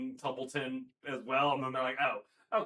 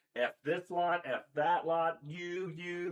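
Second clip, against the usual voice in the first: very slow, playful swearing, dragged out; 4 semitones higher than usual. Retelling behind-the-scenes footage of Tom Bennett: imitating Tom Bennett swearing on set. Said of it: "he's like".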